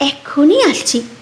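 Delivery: plain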